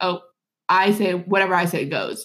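usual speaking voice

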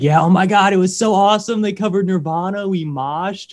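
high-pitched, gushing, excited rave. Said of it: "And I was like".

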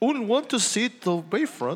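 playful, sing-song, put-on Swedish accent. Interrupting a story to voice the visitors in it, put-on Swedish accent. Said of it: "What does a Swedish accent sound like?".

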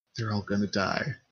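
whispering. A woman leans in close to you and whispers. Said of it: "gets in closer and just whispers".

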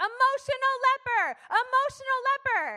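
very high, very loud, slow drawn-out screech. Retelling a friend running through the church: imitating someone screaming. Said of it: "screaming on the top of her lungs".

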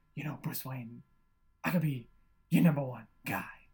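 put-on whispery actor voice. Describing an actor's habits in a movie: Christopher Walken weird whisper. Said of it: "this weird whisper thing".

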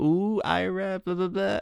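very high, very slow, silly little voice. Retelling how a film character teases Ira: imitating Adam Sandler's silly little voice. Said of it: "a silly little voice or a silly little song".

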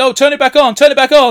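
all-out shrill scream at full volume. Describing a scene on a falling plane, the speaker is imitating a screaming stewardess. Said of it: "the stewardess starts screaming".

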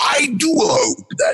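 very high, put-on creature voice. Recalling a role in an unreleased audio drama: Mark Hamill Skeksis voice. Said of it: "I went with a Mark Hamill Skeksy type of voice".

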